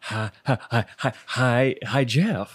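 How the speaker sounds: put-on voice with halting delivery. Greeting a cohost while trying an impression: Jeff Goldblum impression. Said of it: "Jeff Goldblum impression".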